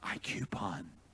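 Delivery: tiny, sheepish, whispered little voice. Retelling what a shy woman said to the speaker, imitating a sheepish little voice. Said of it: "in a little sheepish voice and head down and almost ashamed".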